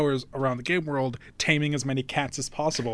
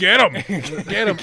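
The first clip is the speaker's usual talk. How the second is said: loud, egging-on, encouraging yell; 4 semitones higher, 7 dB louder than usual. Retelling sitting on the sidelines of a fight, retelling a yell.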